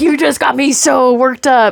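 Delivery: mock mad, worked-up angry outburst. Retelling shouting at an eel that startled them in the water: imitating own angry outburst. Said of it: "I was so mad".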